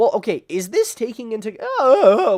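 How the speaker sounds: very loud, very high voice, cracking. Speaker starting a question in a group discussion, voice cracking. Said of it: "what's with the voice cracks?".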